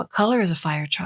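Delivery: plain reading voice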